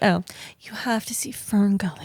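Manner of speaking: sultry voice. Asked how to sound sexy, showing it in a sultry voice. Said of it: "It's more like that".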